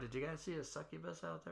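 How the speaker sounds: quiet whispering voice. Playing a character who whispers a question under the door: whispering under a door. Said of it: "I just wanna whisper under the door".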